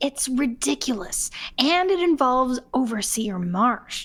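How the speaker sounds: hushed, secretive, conspiratorial half-whisper. Voicing a character who tells Godzilla a secret: half-whispering conspiratorially. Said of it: "now whispering conspiratorially".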